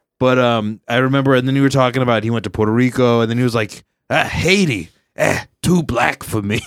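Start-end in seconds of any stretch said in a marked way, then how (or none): 4.1-6.6 put-on slow, drawn-out old man voice.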